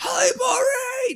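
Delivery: very high shriek with one word stretched out. Retelling a scene where kids greet someone arriving: imitating kids screaming a greeting. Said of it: "Just, like, screaming at her".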